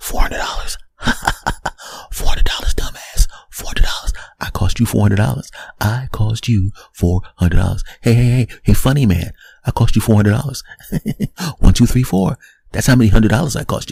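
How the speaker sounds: cracking, mocking whisper. Acting out a windshield crack taunting the driver: crack whispering mockingly. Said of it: "that crack literally is, is, is whispering".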